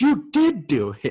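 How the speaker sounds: very high, shrill, emphatic, drawn-out yell. Retelling a coworker's accusation in front of campers, imitating someone yelling. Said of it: "he yells it".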